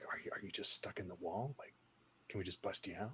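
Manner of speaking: barely audible, very quiet, hushed whisper. In a role-play, the player whispers a question to the trapped character. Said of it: "I'll like whispers".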